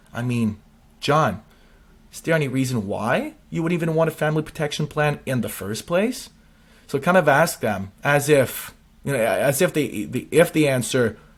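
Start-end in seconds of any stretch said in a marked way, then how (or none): 0.1-6.3 bewildered, genuinely confused and puzzled tone. Showing how to ask a prospect about a family protection plan: confused tone. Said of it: "like a confused tone".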